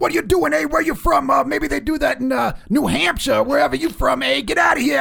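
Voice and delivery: furious, rough, very high-pitched angry screaming. Retelling a man who ran out after Jay hit the horn: his screaming. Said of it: "And he's screaming at us".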